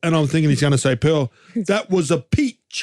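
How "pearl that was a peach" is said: slow, very poor put-on English accent. Imagining what he was going to say, in a really poor english accent. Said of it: "that's a really poor English accent".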